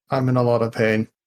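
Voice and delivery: flat, expressionless, dry deadpan delivery. In a role-play, a character lying on the ground tells the others, deadpan. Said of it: "Deadpan, dead face".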